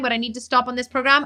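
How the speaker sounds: ordinary talk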